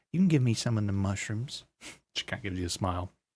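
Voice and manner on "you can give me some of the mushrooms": put-on rural country-accented voice. Game master voicing Mossy from the Emerald Enclave, Mossy country accent. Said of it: "I think I give her a country accent".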